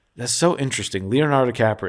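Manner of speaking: ordinary delivery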